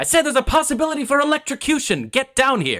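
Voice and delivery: mock yelling, voice pitched very high. Retelling a film scene where Gene Wilder yells down from above, imitating his yelling. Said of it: "Gene Wilder's yelling".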